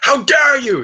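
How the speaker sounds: very high, loud, outraged screaming. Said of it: "screaming in his face".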